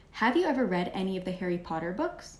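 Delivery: questioning upward tune on "books". Reading a question sentence aloud in a lesson, rising pitch on books. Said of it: "Did you guys see how I raised my".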